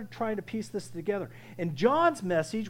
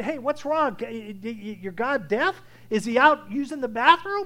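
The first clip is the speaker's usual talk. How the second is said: put-on playful teasing, slow, drawn-out "your"; 3 semitones higher, 5 dB louder than usual. Retelling what one man said to people crying out to their god, retelling a teasing taunt. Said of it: "He was teasing them".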